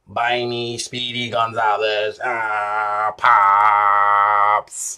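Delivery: bad zombie voice, low and drawn out. Telling about people crowding around asking to be bought pop, in a bad zombie impression. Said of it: "That was a horrible zombie impression".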